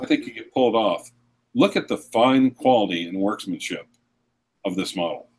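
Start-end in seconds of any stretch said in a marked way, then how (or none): 1.5-5.2 ironic, sarcastic, gushing salesman-style praise. Showing how to promote a watch sarcastically: putting on sarcasm. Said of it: "if you did it sarcastically".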